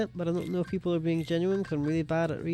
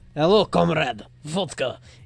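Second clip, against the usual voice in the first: loud, clumsy, bad fake Russian accent; 6 dB louder than usual. The speaker mocks someone greeting a camera with a stereotyped accent; bad russian accent. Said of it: "his Russian accent was straight up just like".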